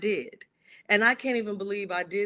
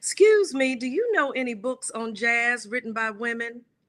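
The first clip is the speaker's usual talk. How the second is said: put-on US Southern accent from Georgia; 3 semitones higher than usual. Retelling what a woman in a bookstore asked the speaker, Southern Georgian accent. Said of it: "a Southern Georgian accent".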